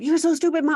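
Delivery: put-on very high-pitched, shrill, loud child's yell. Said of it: "when they're yelling at you".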